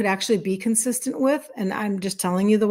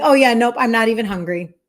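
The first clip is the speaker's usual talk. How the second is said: mock confident, self-assured delivery; 4 dB louder than usual. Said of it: "I say it with such confidence".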